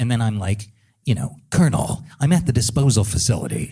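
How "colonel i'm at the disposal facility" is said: put-on raspy voice. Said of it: "adding the rasp in".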